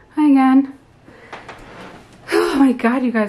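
breathless, winded, out of breath. Showing viewers around the house on a tour, out of breath. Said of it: "I'm out of breath".

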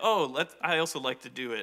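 usual speaking voice

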